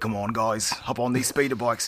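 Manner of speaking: put-on New Zealand accent. Describing a movie scene, the speaker quotes a character in a New Zealand accent. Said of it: "he's got that New Zealand accent".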